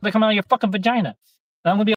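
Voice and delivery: shouting. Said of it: "Can you stop yelling?".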